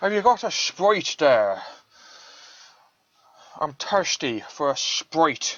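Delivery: terrible, bad, put-on Irish accent. Joking about the word sprite, bad irish accent. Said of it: "my Irish accent is terrible".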